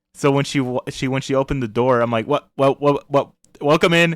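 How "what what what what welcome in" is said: acted stuttering speech. Retelling greeting a cute girl at the door: imitating own past stutter. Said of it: "six W's before I got the welcome".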